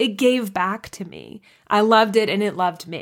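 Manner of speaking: emotional voice welling up with tears. Speaker describes what Titanic gave them, tearing up. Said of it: "I'm tearing up as I say it".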